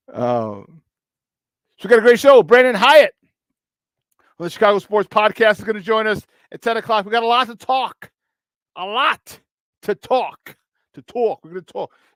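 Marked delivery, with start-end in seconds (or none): 7.1-11.9 put-on New York accent on each repeat. Podcast host previewing the show, in a new york accent. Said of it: "This is my New York accent".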